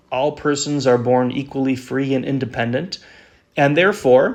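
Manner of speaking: normal talking voice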